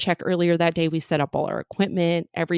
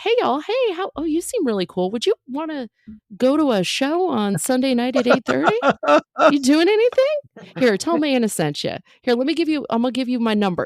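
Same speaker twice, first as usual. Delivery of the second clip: put-on high, folksy country-kid chatter voice; 8 semitones higher than usual. Retelling handing out show flyers, the speaker slips into country kid voice. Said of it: "I just go into like country kid mode".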